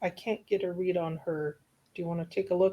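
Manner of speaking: very quiet, hushed delivery. A character leans over to another character to confer, speaking very quietly. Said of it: "just say very quietly".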